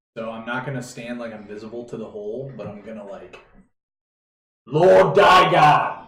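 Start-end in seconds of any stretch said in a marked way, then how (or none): 4.6-5.8 full-throated, loud, carrying yell. Calling down into a pit from its top: yelling a name. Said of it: "I'm just yelling it from the top of the pit".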